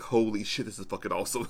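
normal talking voice

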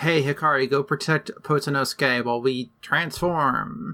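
usual speaking voice

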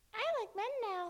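very high, silly, dopey animated cartoon voice. Asked about talking in animated voices, the speaker does a Ralph Wiggum voice. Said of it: "My Ralph Wiggum".

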